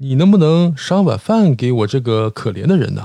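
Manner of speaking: normal talking voice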